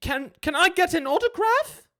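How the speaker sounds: very high, loud, awestruck stammering voice.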